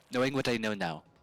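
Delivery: failed Irish accent that comes out Scottish. Attempting an Irish accent for a requested phrase, in a failed Irish accent that came out Scottish. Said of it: "that that's uh that was Scottish".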